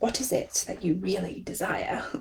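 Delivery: badly done, very hushed, soft devil voice. Talking about a series they watch, the speaker does a bad Lucifer impression. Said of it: "that was probably a really bad impression of it".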